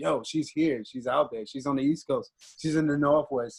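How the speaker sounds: ordinary talk, nothing marked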